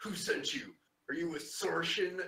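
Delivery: hostile, spitting growl. Voicing a bound captive questioned by the party, growling at them. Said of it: "kind of growls at you".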